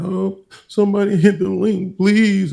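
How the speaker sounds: put-on very high, whiny, whimpering sobbing voice. Teasing another speaker about what they said: imitating someone crying. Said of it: "I heard y'all was crying, like".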